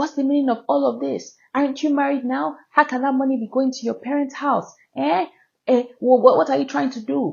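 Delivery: high, furious, screaming angry rant. Speaker retells the driver screaming at her in the car, retelling a screaming rant. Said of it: "he is screaming and shouting at me".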